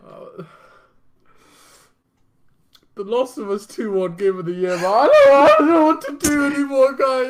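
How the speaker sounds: very high, very loud blubbering and sobbing. Acting in an improvised skit, explaining to friends why he is upset: crying while talking. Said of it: "why are you crying over the Game Awards".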